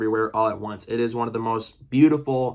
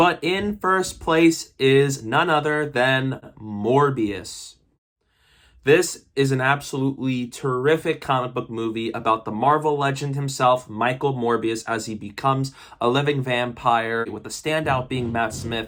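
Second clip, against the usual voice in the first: ordinary talk, nothing marked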